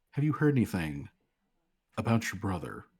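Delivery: dropped, quiet voice. A woman asks Callie whether she has heard anything; lowered voice. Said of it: "she lowers her voice".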